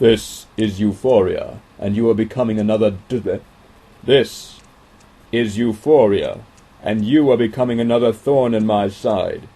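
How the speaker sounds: loud, booming stallion voice. Narrating an unknown voice speaking in Enchanter's mind, as a deep stallion's voice. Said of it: "a deep stallion's voice said in his mind".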